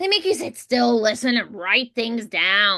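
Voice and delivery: put-on mushy, blurry, whiny little-kid diction. Demonstrating the voice just described, blurry, high whiny voice. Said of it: "like just kind of blurry".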